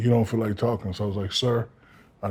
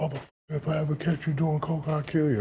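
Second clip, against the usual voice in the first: crying, furious, high-pitched tearful rage; 6 semitones higher, 4 dB quieter than usual. Retelling the father's warning about cocaine: imitating a crying, raging father. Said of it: "He was going crazy. He was crying".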